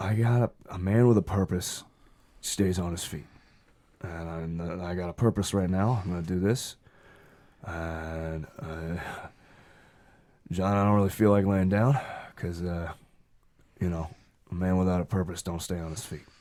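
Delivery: put-on old man voice with coughing. Voicing a coughing pawn shop owner greeting John, coughing old shopkeeper voice. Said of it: "You're coughing again".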